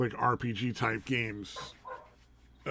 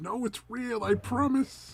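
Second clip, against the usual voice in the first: very high, squeaky, pleading, protesting voice. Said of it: "It's like".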